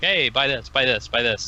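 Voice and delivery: plain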